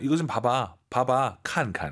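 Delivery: normal talking voice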